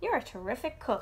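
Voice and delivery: ordinary delivery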